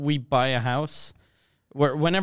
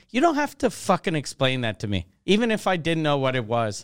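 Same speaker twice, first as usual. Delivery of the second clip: plain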